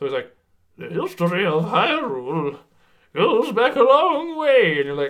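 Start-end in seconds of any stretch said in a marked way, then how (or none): 0.8-4.8 slow, high, drawn-out put-on old voice. Mocking the English trailer's narration: imitating a put-on old person voice. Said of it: "people putting on like old people voices".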